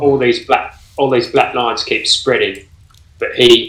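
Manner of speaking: ordinary talk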